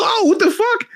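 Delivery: amazed exclamation, high, squealed disbelief.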